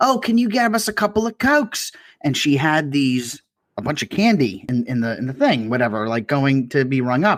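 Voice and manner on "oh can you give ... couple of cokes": put-on heavy, high-pitched British accent. Retelling what a woman said while her items were rung up, thick British accent. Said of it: "a really thick British accent".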